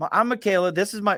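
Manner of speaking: high, twangy voice, like over the phone. Retelling a phone call from a caller wanting on the podcast: twangy voice. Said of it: "I hear this twangy voice on the other end go".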